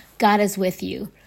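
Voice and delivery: ordinary talk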